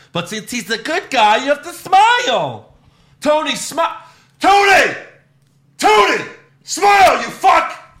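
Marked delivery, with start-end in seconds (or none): 3.2-7.7 high, drawn-out, urging tone. Retelling a backstage moment, imitating a stagehand urging the champion to smile. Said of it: "you could hear the stagehand go".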